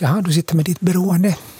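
acted-out, wry, ironic, half-joking, tongue-in-cheek delivery. The speaker recounts a remark to someone who has scrolled too long: retelling an ironic remark. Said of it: "det brukar jag kanske säga ironiskt".

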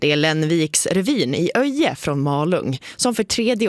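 normal talking voice

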